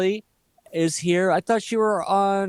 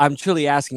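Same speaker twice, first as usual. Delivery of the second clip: plain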